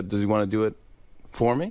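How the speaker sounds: ordinary talk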